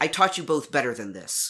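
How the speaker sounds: classroom teacher voice, as if settling a class. In a role-play, speaking as a teacher: projected teacher voice. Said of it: "I'm going to use teacher voice, that way of projecting to get a class to quiet down".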